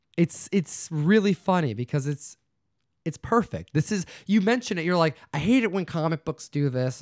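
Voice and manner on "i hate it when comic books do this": put-on whining voice. Imitating the other speaker's complaint: imitating a friend's complaining voice. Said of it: "I don't know why I'm giving you this voice here".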